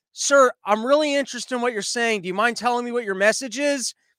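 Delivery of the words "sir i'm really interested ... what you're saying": plain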